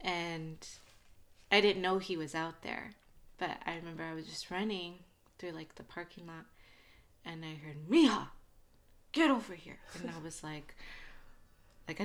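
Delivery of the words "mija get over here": stern, gruff, raised voice. Recalling a man calling her over in a parking lot, imitating his gruff stern voice. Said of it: "he had that like gruffy voice".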